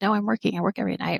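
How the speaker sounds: mock weary, tired, sarcastic brush-off tone. Retelling an answer to a young child at night: imitating own sarcastic tired reply. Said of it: "Kind of sarcastically and tired".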